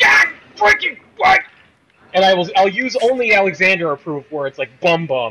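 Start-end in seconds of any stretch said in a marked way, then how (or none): 0.0-1.4 sudden, much higher and louder outburst, like a heart attack. A host describes yelling forbidden words in his living room, like having a heart attack. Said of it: "I will sound like I'm about to have a heart attack".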